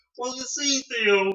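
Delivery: very high, slow, drawn-out drawl. Showing what an impersonation should say: bad Bill Cosby impression. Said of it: "That was also really bad".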